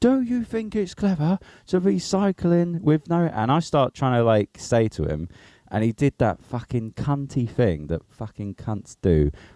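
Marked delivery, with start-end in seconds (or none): 0.0-3.2 imitated man's shout, higher. Retelling an angry man's shouted question on a cycle path: imitating a man shouting. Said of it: "he starts shouting".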